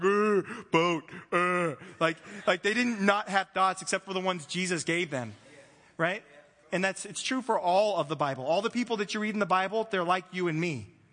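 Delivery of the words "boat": halting, grunted put-on caveman noises. Joking that the disciples weren't cavemen banging rocks: put-on caveman voice.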